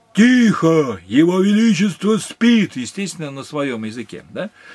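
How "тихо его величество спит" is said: booming, thunderous, slow herald-like shout from on high. Imitating the night herald in the maharaja's city, with a thunderous herald shout. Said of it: "громовым голосом ... Я сейчас попробую, как он".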